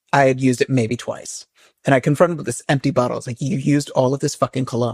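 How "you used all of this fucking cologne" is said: acted-out furious anger, mock-furious tone. Retelling confronting a man over an emptied cologne bottle: mock-furious. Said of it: "I was still furious with him".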